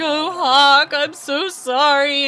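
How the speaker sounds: mock, high, loud, very slow, drawn-out tearful sobbing. Retelling her mom holding a hurt chicken, imitating mom crying. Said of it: "she's like crying and holding Hawk".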